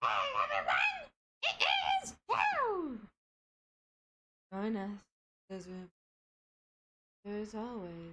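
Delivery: low voice with a swinging pitch. Introducing Toad to viewers, speaking as Toad in the Toad voice. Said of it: "my Toad voice".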